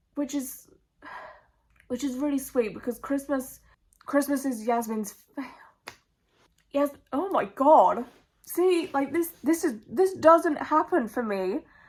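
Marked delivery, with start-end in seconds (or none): 0.2-5.2 talking while fighting back tears, choked up. Describing something sweet, trying not to cry: near tears. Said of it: "why am I going to cry?".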